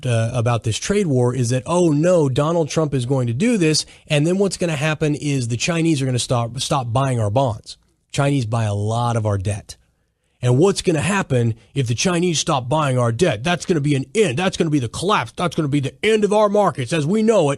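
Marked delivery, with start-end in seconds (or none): none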